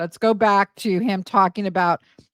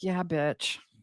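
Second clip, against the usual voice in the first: put-on, self-satisfied, smug, knowing tone; 3 semitones lower, 10 dB quieter than usual. Imitating Mia reacting as the present is opened: imitating Mia's smug reply. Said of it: "It's kinda like that smug look".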